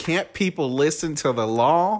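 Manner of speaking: sudden Southern-sounding accent. Complaining about airplanes flying overhead, in a Southern accent. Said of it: "Why did you say that so southern?".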